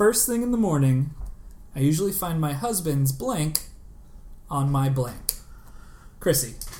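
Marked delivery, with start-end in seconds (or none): none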